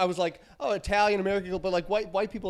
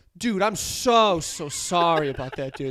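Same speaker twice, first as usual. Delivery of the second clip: mock sincere, heartfelt, slow, genuine-sounding sorry tone; 3 semitones lower, 4 dB louder than usual. Retelling a phone call where Tom apologized: imitating Tom's sincere apology. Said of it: "And he's being genuine".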